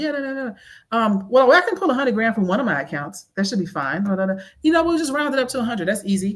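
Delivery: acted, offhand, casual, showing-off bragging tone. Retelling a phone call near an eavesdropping woman: imitating own bragging talk. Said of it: "I'm talking big shit".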